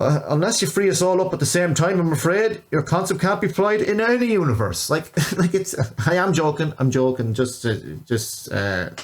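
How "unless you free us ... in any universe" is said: put-on laid-on rural Irish accent, a bit high. Voicing Douglas Murray for a joke, do Douglas Murray in a culty Irish accent. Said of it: "giving uh, Douglas Murray this kind of um, culty Irish accent".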